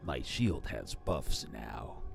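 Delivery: low raspy put-on voice. Voicing a game character about shield buffs, Master Chief raspy voice. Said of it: "in his little raspy voice".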